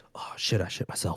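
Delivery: barely audible, faint, tiny whisper. Acting out what to say to the whole world: pretend faintest whisper. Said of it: "the faintest little whisper ever".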